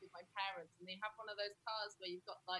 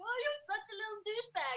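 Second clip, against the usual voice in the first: cute voice, higher and louder; 13 semitones higher, 4 dB louder than usual. Showing how you talk to your cat: imitating cute voice for a pet. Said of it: "you do the really cute sound for them".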